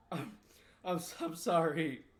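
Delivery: tearful crying voice. Voicing a captive forced to apologize for shooting someone: crying apology. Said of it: "You made this big fucking man cry".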